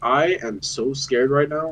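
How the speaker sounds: mock calm, confident delivery. Describing how some people admit fear, imitating calm, confident delivery. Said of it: "it's so confident and calm".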